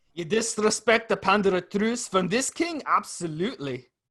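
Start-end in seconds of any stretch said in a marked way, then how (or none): 0.2-2.8 put-on Scottish accent, pitched up. Quoting a line from Braveheart, sounding like Shrek: Scottish accent from Braveheart. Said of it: "you sound like Shrek".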